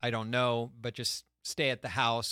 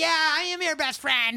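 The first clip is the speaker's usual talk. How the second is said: put-on drunken yell, much higher, slower; 8 dB louder than usual. Describing drunk girls yelling over each other, imitating a drunk girl yelling. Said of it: "they're like just yelling at the same time".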